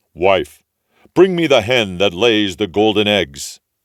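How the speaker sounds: big, loud giant ogre voice. Reading a fairy tale aloud, the ogre orders his wife: giant ogre voice. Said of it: "My man is an ogre, / He was a big one, to be sure. At his belt he had 3 calves strung up by their heels, and he unhooked them and threw them down on the table and said, "Here, wife, broil me a couple".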